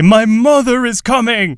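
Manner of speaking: slow, drawn-out delivery at very high pitch. Retelling the moment a character announces his mother is coming: Thor's deep voice. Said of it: "uses that, like, deep voice to say".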